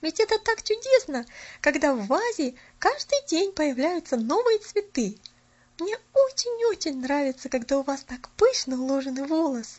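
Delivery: contented, pleased, approving and satisfied tone. A narrator reads Polyana's words to Miss Snow, added with satisfaction. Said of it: "удовлетворенно добавила она".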